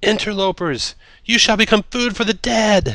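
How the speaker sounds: put-on very high, loud, voice-cracking young man's shout. Game narrator voicing a young man who spots the players, shouting with voice cracking. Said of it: "A young man sees you and shouts".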